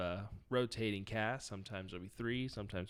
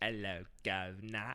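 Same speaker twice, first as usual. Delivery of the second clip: put-on English accent. Asking a co-host which english accent they mean, mock english accent. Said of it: "How English?".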